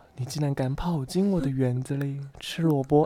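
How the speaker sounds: weak, frail, soft, feeble witch voice. The storyteller redoes the witch's line with a changed witch voice: weak witch voice. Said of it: "好虚弱".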